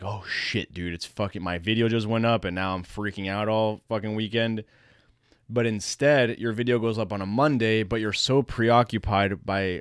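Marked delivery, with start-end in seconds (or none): none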